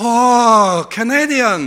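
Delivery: put-on Chinese accent with drawn-out "oh". Retelling meeting a man in China who shakes his hand, put-on Chinese accent. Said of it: "I'm going to do a couple of accents here for you".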